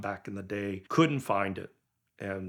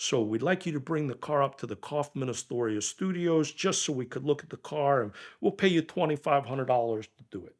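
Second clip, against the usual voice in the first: put-on New York Italian accent; 6 semitones higher than usual. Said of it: "he's got that New York Italian accent".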